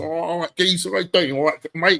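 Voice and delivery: loud, casual, blokey, matey voice. British speaker with jamaican parents showing how he talks with workmates. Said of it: "if I'm with my mates".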